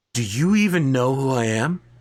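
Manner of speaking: character voice sounding offended. Voicing a character whose lie was discovered: indignant NPC voice. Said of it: "This guy is just like".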